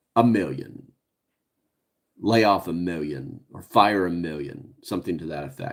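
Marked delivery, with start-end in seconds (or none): 0.2-4.8 play-acted low, slow, emotionless, cold villain voice. Retelling a movie scene where the evil boss answers: imitating an emotionless villain. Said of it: "with no emotion in his face".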